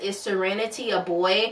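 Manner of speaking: plain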